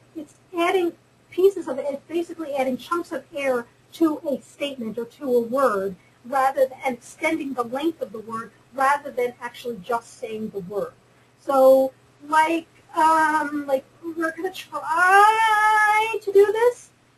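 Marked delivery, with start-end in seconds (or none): 12.3-16.9 very slow, drawn-out creaky vocal fry. Explaining a way of speaking, the speaker tries demonstrating creaky voice. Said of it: "I'm going to try and do it for you".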